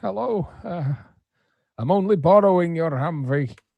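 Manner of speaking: put-on loud high old star voice. Unable to think of a voice to use, a speaker settles on an old Sean Connery voice. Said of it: "let's go with old Sean Connery".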